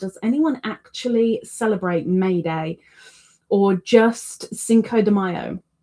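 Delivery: plain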